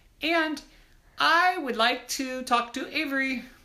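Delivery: very high-pitched put-on voice. Pretending to be Madam President, asking to talk to Avery, higher-pitched voice. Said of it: "I talk with a little bit higher of a voice".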